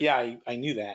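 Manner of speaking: put-on smug tone. Retelling annoying people at meetings, imitating a smug tone. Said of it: "very smugly and annoy people at meetings".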